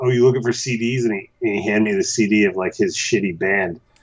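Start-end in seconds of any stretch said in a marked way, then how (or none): none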